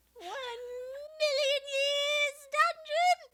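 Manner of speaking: high-pitched, loud and slow screech. Quoting a favorite cartoon character: terrible Lemongrab impression. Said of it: "That was a terrible impression".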